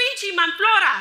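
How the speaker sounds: very loud, high-pitched hollering yell. Speaker recounts a stranger yelling from a car window at the speaker's wife and the speaker, retelling a yell. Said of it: "someone yells".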